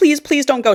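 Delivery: mock scared, high, frightened pleading. Retelling a story's scene where she begs him not to leave: imitating a freaked-out plea. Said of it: "She's freaked out".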